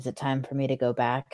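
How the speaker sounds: very deep, very soft, hushed low voice. A storyteller voices a freed man asking a question, in a very deep, low voice. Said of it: "in a very deep and low voice".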